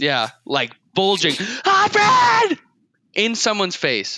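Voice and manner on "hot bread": very high, shrill, loud yell. Acting out yelling at a customer at the register: yelling hot bread. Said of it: "I have to yell this".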